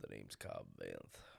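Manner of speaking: very deep, hushed, breathy near-whisper. Speaker demonstrating a character voice for others, in a deep Cobb Vanth voice. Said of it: "the thing that brings it way down here".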